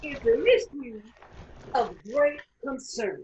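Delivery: preaching voice, like a sermon. Acting out a sermon to King as her congregation: imitating King preaching. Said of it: "Throughout her speech, King is her congregation".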